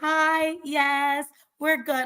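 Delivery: put-on sweet, innocent tone, sugary, very slow.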